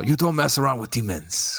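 put-on Italian accent in a priestly style. Talking about demons in a Vatican priest Italian accent. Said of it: "You've got to say it with a Vatican priest Italian accent or something".

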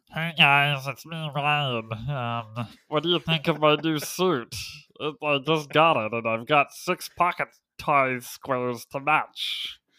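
loud, high-pitched, nasally voice. Imitating how another speaker sounds in real life: nasally voice imitating Ryan. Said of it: "more, like, nasally. He's kinda like".

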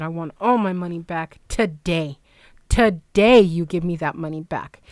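put-on furious voice. Speaker retells phoning the place back after their cat vomited, retelling flipping out. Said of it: "I was flipping out".

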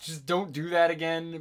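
ordinary talk, nothing marked

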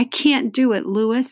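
high, gasping, defeated voice. Stephen, unable to move the iron mallet, tells Louis he can't, gasping. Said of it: "he gasped".

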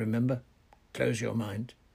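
ordinary delivery

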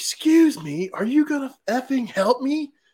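shrieked, very high, slow and drawn-out scream. Retelling how a customer screamed at them though they didn't work there, retelling a scream. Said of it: "he screamed".

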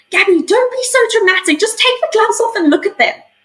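exclaiming, very high-pitched. Retelling what one of the climbers said to her in the tent: retelling an exclamation. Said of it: "one of the climbers exclaimed".

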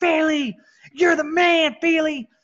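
re-enacted yelling. Recalling pointing at a coach walking by, retelling a yell at a coach. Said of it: "I just yell".

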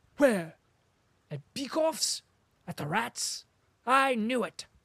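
high, piping voice. Reading the story, the lieutenant replies to Denisov: Telyanin's piping voice. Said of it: "and Lieutenant [name], a small officer of the same squadron, / and Lieutenant [name], / replied a piping voice, / and Lieutenant [name]".

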